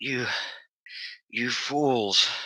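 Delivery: slurred, blank, tinny voice with echoes. A storyteller voices a red-skinned android waking up, slurred, tinny whisper. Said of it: "She whispers blankly, her voice slurring into tiny, tinny echoes".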